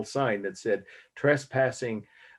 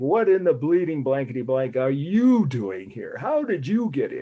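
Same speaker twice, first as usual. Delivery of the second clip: loud, furious mock yelling; 4 semitones higher, 5 dB louder than usual. Recalling a man who woke the speaker by blowing a whistle in his face, retelling an angry shout. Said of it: "he was shouting at me like".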